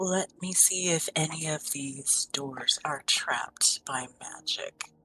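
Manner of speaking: whisper meant to carry a little. Voicing a character who checks the doors for magic traps: whispering in character. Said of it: "and just whisper".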